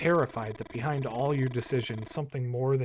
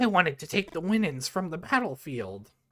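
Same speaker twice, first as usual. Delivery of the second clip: put-on old grandmother voice, high-pitched; 5 semitones higher than usual. A player speaking as the grandma character in the game, in a grandma impression. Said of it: "Good Grandma impression".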